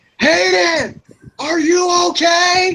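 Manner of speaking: very high, slow, drawn-out shout. Planning a scene, showing how Fiona will call out to Hayden, shouting. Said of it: "Fiona will be shouting".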